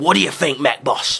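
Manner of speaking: put-on orc voice. Acting out an orc telling his boss an idea: put-on orc voice. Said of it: "Orc mentality goes something a little bit like this".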